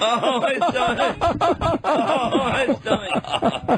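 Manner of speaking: helpless laughing fit.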